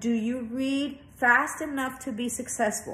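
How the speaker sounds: ordinary delivery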